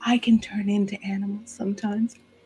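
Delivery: soft, hushed, trying hard to whisper. Describing how Carmilla speaks while standing on tiptoe, Carmilla trying to whisper. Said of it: "tries to be really quiet".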